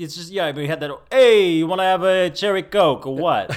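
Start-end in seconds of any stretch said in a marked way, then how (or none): 1.1-3.5 put-on New York accent, higher and louder. Recalling a restaurant waiter, the speaker quotes him: imitating a New York accent. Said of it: "how overly New York the waiter was".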